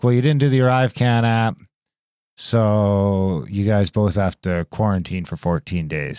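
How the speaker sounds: normal talking voice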